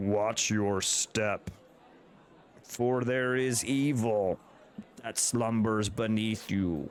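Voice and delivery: deep, low, grumbly rumbling bear voice. The game master voices Chansey the bear warning the players, in a deep grumbly Chansey voice. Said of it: "in a deep, kind of weird, grumbly voice".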